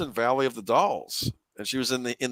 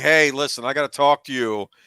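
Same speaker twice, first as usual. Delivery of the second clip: mock loud speech, louder; 6 dB louder than usual. Acting out what a movie character might say at the house: pretend loud talking. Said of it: "loudly say".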